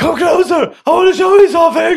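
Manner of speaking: very high, loud calling-out character voice. In a pretend game, the rainbow calls down to the little pig: Mr. Rainbow Man voice. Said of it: "Kan jag få göra rösten?".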